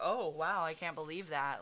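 ordinary talk

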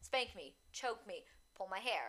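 commanding, insistent, demanding tone. Speaker demonstrates asking for things in bed, in a demanding tone. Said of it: "not in that demanding way I just did".

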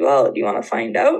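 mock sarcastic, cheeky tone. Retelling the cousin's reply to being asked what a missionary is, mock-sarcastic cheeky tone.

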